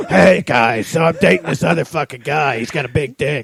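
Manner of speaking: loud botched voice, sounding like a raspy smoker. Trying a Seth Rogen impression that ends up sounding like an aunt: failed Seth Rogen impression. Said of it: "I tried to do a Seth Rogen impression, and it just sounded like my Aunt Becky".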